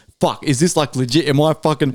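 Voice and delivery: ordinary talk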